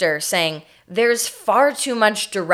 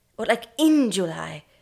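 put-on British accent, little man voice; 2 semitones higher than usual. Playing a director coaching Orson on a line, in a little British man voice. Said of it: "little British man".

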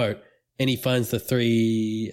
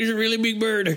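higher, put-on cartoon-scientist voice. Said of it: "He sounds like an Adult Swim cartoon character".

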